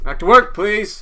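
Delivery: shrill, very loud, high-pitched shout. Retelling how a man got on the boat and started yelling, imitating his yell. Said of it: "he starts yelling like".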